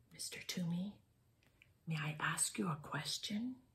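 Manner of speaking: very quiet, barely audible whisper. Reading a story aloud, a boy asks a question: whispering.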